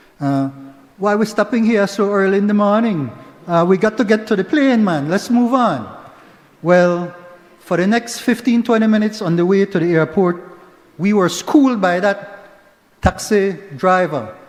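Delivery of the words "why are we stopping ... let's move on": tried-on, put-on Caribbean accent. Retelling a taxi ride, the speaker voices the person beside them addressing the driver, Caribbean accent. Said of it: "let me try my, my Caribbean accent".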